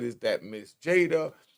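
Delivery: ordinary delivery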